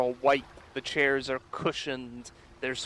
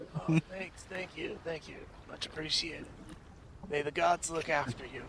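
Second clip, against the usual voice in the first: put-on stoner character voice; 3 semitones higher, 7 dB quieter than usual. A down-on-his-luck character thanks the players for silver coins, in a stoner voice. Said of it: "sound like a stoner now?".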